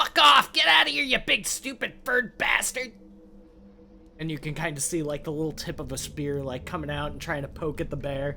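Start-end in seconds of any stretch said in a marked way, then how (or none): 0.0-2.9 frantic, panicked, shrill, very high, very loud goblin screech. A narrator voices a goblin shouting at a bear, in a panicked goblin voice. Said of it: "very high pitched voice... goblin... sounds very panicked".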